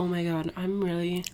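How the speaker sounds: very soft, low, weak, dizzy moan.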